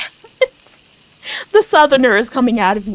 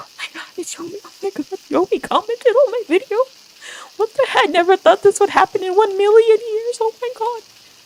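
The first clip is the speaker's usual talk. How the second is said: mock very high, tearful, hysterical crying; 10 semitones higher than usual. Retelling own reaction to a video comment: retelling hysterical crying. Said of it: "I was hysterical".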